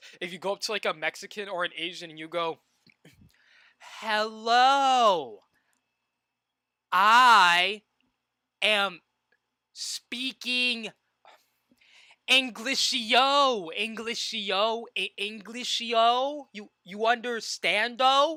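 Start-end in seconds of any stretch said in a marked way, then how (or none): 4.0-18.4 mock very slow, loud, patronizing baby talk. Imitating someone talking down to a foreigner: imitating condescending baby talk.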